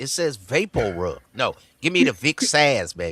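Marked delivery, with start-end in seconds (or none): 1.3-3.1 put-on old-school grandmother voice. Retelling what Grandma used to say about Vapor Rub: imitating Grandma. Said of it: "Grandma used to call it Vicks ass".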